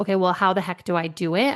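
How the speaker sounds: ordinary delivery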